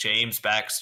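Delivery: robotic voice. Joking about a voiceover correcting who said the quote: robotic voice. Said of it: "the robotic voice is being like".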